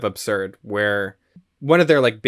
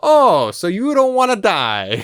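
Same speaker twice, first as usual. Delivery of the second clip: very high, very slow, swooping, sneering sarcastic drawl; 10 semitones higher, 6 dB louder than usual. Retelling a film scene, quoting its great line delivery: James Cagney impression. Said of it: "James Cagney has this great line delivery".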